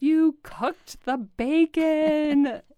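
shrill, high, very slow drawn-out yell. Recalling waking up to the smell of bacon, the speaker is retelling a shout. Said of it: "and I woke up and just shouted".

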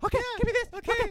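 very high, very loud, shrill, bossy voice. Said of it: "She talks like that too".

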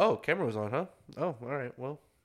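mock casual, unbothered, easy nonchalant tone. Retelling how someone reacted on learning his camera was on: imitating a nonchalant reply. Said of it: "really nonchalant".

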